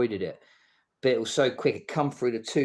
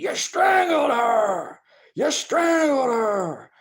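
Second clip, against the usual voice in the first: acted shrieking, shrill, very high, very slow; 13 semitones higher, 5 dB louder than usual. Retelling how an attacker came running in: imitating someone screaming. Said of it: "He come running in screaming".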